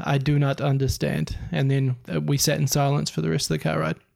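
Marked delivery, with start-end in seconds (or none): none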